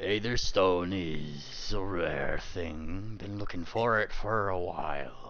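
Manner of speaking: growly voice with a slight grr running through. A narrator voices a character's line during a story, growly voice. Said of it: "kind of with a grr in his voice".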